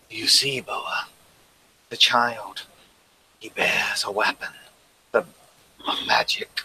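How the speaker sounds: soft, hushed, breathy whisper. Narrator voicing the matriarch, her hand on boa's shoulder: whisper. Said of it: "she whispers to you".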